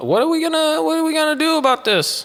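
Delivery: put-on Yiddish-inflected accent.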